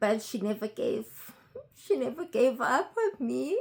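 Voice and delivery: words coming through tears, crying voice. Speaker describing a woman who never gave up on them, crying. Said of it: "I don't know why I'm crying".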